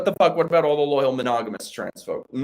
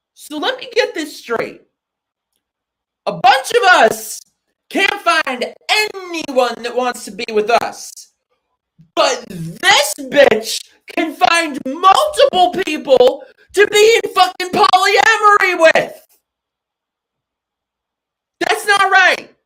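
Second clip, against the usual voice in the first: loud, shrill, very high-pitched angry yelling; 12 semitones higher, 6 dB louder than usual. Talking with Mikey and the others, angry shouting. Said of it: "Sorry, I'm like shouting".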